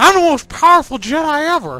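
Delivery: silly goofball voice. Describing a Revenge of the Sith trailer parody with a goofball Anakin: goofy Anakin Skywalker voice. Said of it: "silly goofball ta- talking kind of like this".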